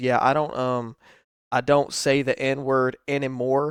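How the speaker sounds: barely-there, hushed half-whisper, very low volume. Quoting a podcast clip of Wings of Redemption, imitating Wings of Redemption half-whispering. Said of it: "very quietly".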